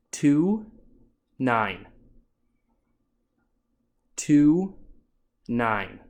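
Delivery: very slow, spaced-out words, voice dropping at the end. Demonstrating how to read the test numbers aloud, one-second pause between numbers. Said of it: "You want about one second in between".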